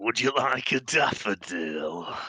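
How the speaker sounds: very slow, seedy, lascivious-sounding voice. Speaking to the group at the start of the session, in a dodgy-sounding voice. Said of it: "shouldn't sound dodgy, but it clearly does".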